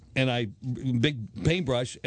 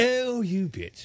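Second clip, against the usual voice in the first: sweet put-on British accent, very high and pleasant; 10 semitones higher than usual. Speaker demonstrates how to read a letter aloud: pleasant british accent. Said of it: "But say it with a pleasant British accent".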